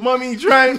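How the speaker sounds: put-on very high, shrill, loud little kid scream. Retelling a child in the car who needs to poop, imitating a screaming kid. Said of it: "to fucking screaming".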